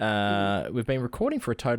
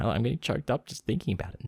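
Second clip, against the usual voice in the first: ordinary talk, nothing marked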